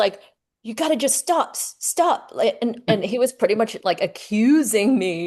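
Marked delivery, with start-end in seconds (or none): 0.6-2.3 put-on, pitched-up, insistent yelling. Retelling a phone call where the rental client yelled: imitating a client yelling. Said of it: "he was just yelling at me".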